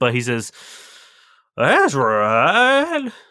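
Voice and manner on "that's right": put-on very drunk old man voice, higher and louder. Voicing an old man answering a player's question: very drunk old man voice. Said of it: "he's, uh, very drunk".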